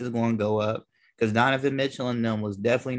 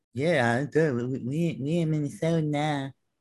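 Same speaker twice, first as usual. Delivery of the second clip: mock very slow, flat, listless, no conviction; 4 semitones higher than usual. Mocking how someone said it without conviction, imitating a flat, unconvinced delivery. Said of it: "he didn't even say it with conviction".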